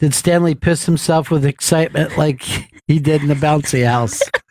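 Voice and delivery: plain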